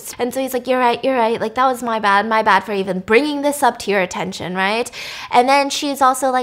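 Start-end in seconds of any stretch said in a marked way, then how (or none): none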